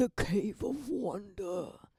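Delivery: crazy, slow, drawn voice.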